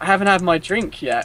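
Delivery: mock even, courteous, calm, pitched a bit up. Retelling how he answered the man who runs the store, retelling his own calm reply. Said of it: "in a kind of calm manner".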